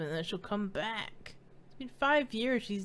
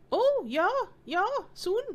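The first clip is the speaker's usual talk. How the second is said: put-on little boy voice, much higher; 10 semitones higher, 5 dB louder than usual. Playing Chug, asked how he is feeling, in an Uter voice. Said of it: "I'm trying to sound like a little chubby boy".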